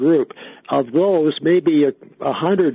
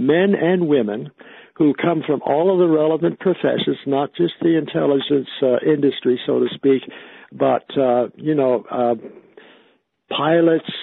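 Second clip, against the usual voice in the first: plain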